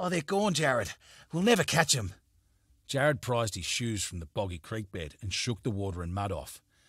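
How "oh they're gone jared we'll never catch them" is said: panting, breathless, much higher. Narrator reading a tired man's line after a chase, panting, out of breath. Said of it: "panting to catch his breath".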